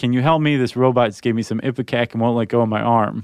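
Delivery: ordinary talk, nothing marked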